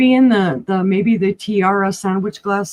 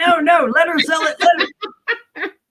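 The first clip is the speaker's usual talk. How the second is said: mock high-pitched hollering yell; 8 semitones higher than usual. Imitating a husband who is probably screaming from the living room: imitating someone screaming. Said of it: "He's probably screaming from the living room".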